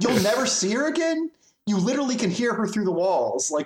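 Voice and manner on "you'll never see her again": put-on scream, higher. Retelling screaming at the TV about a show: retelling own screaming at TV. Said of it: "And I screamed at my T V".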